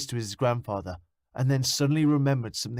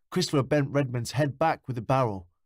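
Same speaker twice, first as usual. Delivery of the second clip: plain reading voice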